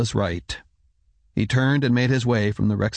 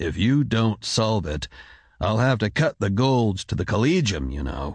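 plain

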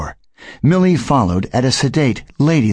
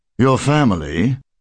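ordinary delivery, nothing marked

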